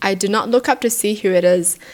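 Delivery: ordinary talk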